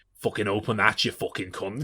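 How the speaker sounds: put-on menacing villain voice with Scouse accent. Retelling a film villain's threat, imitating Stephen Graham's Scouse villain voice. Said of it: "Stephen Graham doing this kind of".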